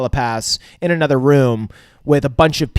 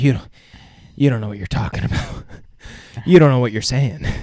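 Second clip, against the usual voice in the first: acted, stunned, disbelieving tone. Retelling a TV scene, quoting Homelander: imitating Homelander in disbelief. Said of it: "in disbelief".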